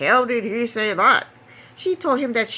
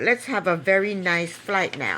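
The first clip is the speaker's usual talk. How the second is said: mock, dry sarcasm dripping off each word; 4 semitones lower, 3 dB quieter than usual. Retelling what a woman sarcastically said to a man who hurt her, retelling a sarcastic remark. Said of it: "she sarcastically said".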